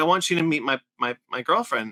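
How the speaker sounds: plain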